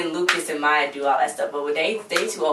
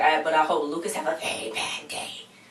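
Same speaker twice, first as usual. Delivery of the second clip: put-on devil voice; 4 dB quieter than usual. Retelling what she said next, in her devil voice. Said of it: "In her devil voice".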